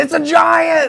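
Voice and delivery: put-on shrill, very high holler. Retelling a hunt where a companion spotted a deer: imitating Cliff yelling. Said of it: "Cliff's yelling".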